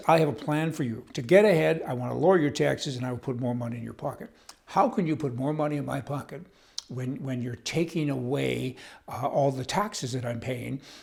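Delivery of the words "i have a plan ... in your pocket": normal talking voice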